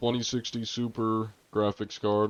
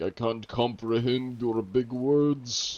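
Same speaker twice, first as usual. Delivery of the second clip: slow, drawn-out, higher-pitched mock Russian accent. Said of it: "I started going Russian for that".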